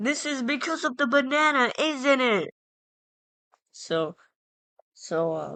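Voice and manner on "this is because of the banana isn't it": play-acted, high-pitched, accusing scream. Retelling being made to walk laps at recess: imitating own screaming. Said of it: "I start screaming".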